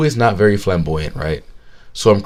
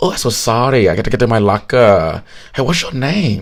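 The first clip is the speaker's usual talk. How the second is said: heavy put-on Vietnamese accent. Retelling what a guy said after bumping into him at the lockers, thick Vietnamese accent. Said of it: "thick Vietnamese accent".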